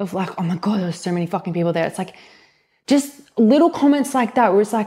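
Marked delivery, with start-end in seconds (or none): 0.4-1.9 downbeat, really negative way of talking. Retelling a remark made to her about a house: imitating own negative tone. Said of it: "a really negative, like, way".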